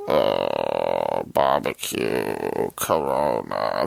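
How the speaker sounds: very low, deep, creaky, rough grumble, "uh" stretched. Showing how the movie character talks: Dominic Toretto grumble. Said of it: "Dominic Toretto is more like".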